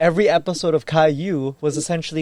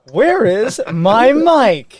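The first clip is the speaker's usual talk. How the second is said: put-on cartoon girl voice, higher and louder; 6 semitones higher, 6 dB louder than usual. Mocking a disliked kids' show by imitating its host: Dora the Explorer voice. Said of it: "I cannot stand Dora the Explorer. Like".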